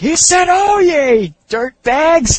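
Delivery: top-of-the-lungs, very high, very loud, drawn-out shriek. Retelling the moment the dummy screams at the top of his lungs: imitating Scarface screaming. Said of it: "he just screams like".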